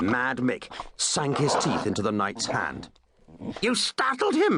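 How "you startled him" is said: piercing, shrill, very high-pitched voice. A lady accuses the knight after the dog bites his hand, in a shrill voice. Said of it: "in a shrill voice".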